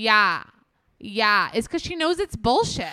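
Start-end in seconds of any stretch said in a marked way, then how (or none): 0.0-1.5 loud, dead-level monotone. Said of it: "Kourtney's with her monotone being like".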